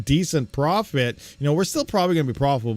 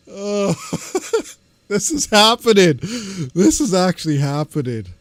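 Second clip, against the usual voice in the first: giggling through words, higher and louder; 5 semitones higher, 4 dB louder than usual. Reacting to the top mining coin, laughing while talking. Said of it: "I just can't stop".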